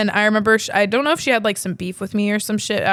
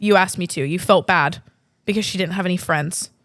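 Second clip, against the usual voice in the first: usual speaking voice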